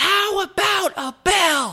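acted, very high, very slow, drawn-out yelled scream. Retelling how a lady reacted after the bike passed: imitating a lady screaming. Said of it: "this lady screams".

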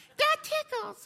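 very high, squeaky puppet voice. Pastor imitating a toy that talks when tickled, Elmo impression. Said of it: "this is my Elmo impression".

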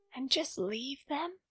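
half-whispered under the breath. Reading a story, Amy half-whispers back to Jack; half-whispered. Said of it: "Amy whispered back".

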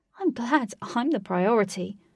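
openly sarcastic. Katie replies sarcastically. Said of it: "Katie said sarcastically".

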